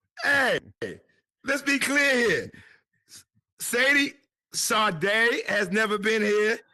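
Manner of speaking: high, slow, emphatic, drawn-out announcer-style host voice.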